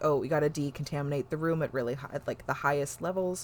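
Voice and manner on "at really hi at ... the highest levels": normal talking voice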